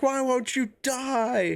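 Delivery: very high-pitched, shrill, taunting scream. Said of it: "He's just screaming at him".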